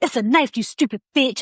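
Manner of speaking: acted agitated outburst. Retelling talking to oneself in the car in traffic: imitating own agitated outburst.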